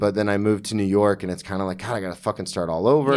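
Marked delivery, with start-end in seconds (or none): none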